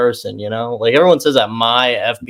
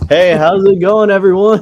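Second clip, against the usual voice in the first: put-on slow, loud, drawn-out elderly man voice; 8 semitones higher, 5 dB louder than usual. Mocking another speaker's awkward greeting: imitating a seventy-year-old dad. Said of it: "you're a seventy-year-old dad".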